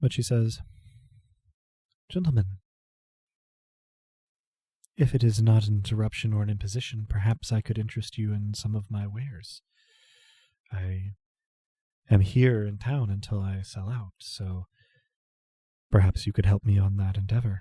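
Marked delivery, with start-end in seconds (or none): 2.1-17.6 put-on proper, formal delivery with no accent. Voicing a traveling merchant offering wares: soft formal voice. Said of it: "speaks with a soft formality".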